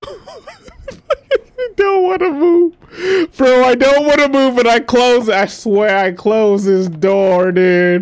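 frightened, shaky voice. Playing a game and too afraid to move, scared and shaking. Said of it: "I'm shaking right now".

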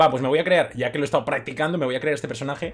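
ordinary talk

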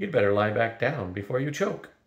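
ordinary delivery

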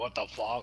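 mock obnoxious, rude, jerk-style delivery. Describing how rude players talk, imitating a rude asshole tone. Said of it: "some people we meet, they have, like, an asshole tone, you know, they talk like".

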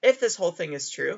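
quick phrase, voice breaking mid-phrase. Explaining a logic statement very late at night, voice cracking. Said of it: "excuse my voice crack there".

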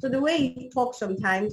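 ordinary delivery

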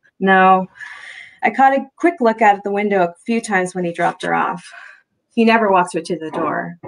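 ordinary delivery

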